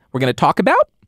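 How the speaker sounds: exaggerated upspeak rise on the word about. Giving a deliberately bad upspeak example: exaggerated upspeak rise on about. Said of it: "It's called upspeak. ... I dislike upspeak, though. ... that's a really bad".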